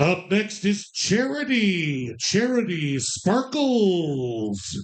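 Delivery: strip club emcee announcer voice. Calling out numbers, showing the voice a woman said she has: strip club announcer voice. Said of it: "like a strip club announcer voice".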